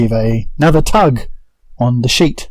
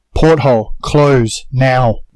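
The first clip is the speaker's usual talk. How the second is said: sharp, barked-out delivery. Speaking in character, giving an order to Zuana: barking an order. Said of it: "I'm going to bark at Zuana".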